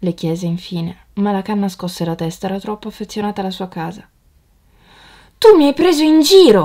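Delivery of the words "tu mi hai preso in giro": very loud, high-pitched shout. The young swallow to the reed who won't leave with him, shouting. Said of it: "gridò il rondinotto".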